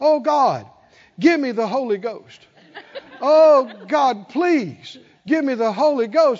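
loud, drawn-out, pleading hollering cry. Recounting being draped over the altar, the speaker acts out his past self, retelling his hollering. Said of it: "and I'm hollering".

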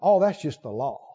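mock very low, contemptuous, despising brush-off tone. A speaker imitates people who talk disparagingly about the law, mock-despising tone. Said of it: "they use a despising tone in their voice".

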